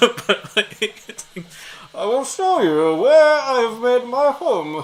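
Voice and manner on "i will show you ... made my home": loud, raised, booming movie villain voice. Teasing her with a villain impression from the movie: Bane voice. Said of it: "I do tease her with the Bane voice sometimes".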